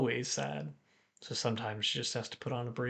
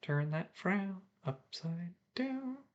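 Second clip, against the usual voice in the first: quiet, hushed, slightly high-pitched murmur; 6 semitones higher, 7 dB quieter than usual. A character nudges another's head with a glass and speaks to her quietly. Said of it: "quietly says".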